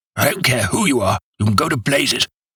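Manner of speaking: bad-tempered outburst. A voice behind a door that will not open answers visitors' knock: angry roar. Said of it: "roared the angry voice".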